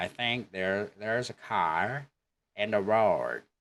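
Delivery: slow accent from Northern Ireland. Showing learners how a sentence sounds: northern irish accent. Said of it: "But in Northern Ireland".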